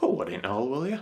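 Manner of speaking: quick, broader Yorkshire accent. Explaining Yorkshire expressions, speaker repeats a phrase with a bit more Yorkshire accent. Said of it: "a bit more of a Yorkshire accent".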